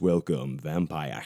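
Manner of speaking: silky, sexy voice. Joking about reading a vampire novel aloud, in a silky, sexy voice. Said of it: "I'm not going to do it like that".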